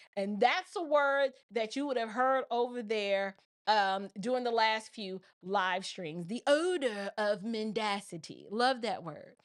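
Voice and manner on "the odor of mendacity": put-on slow, light, slight British accent. Quoting a phrase the lead attorney uses, in a slight british accent. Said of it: "was that British, uh, English accent?".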